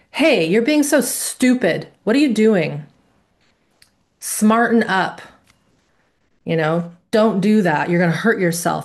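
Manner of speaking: aggressive, violently harsh tone. Speaker demonstrating the toxic shame variety while cutting bread, with a violent tone. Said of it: "it often has a violent tone to it".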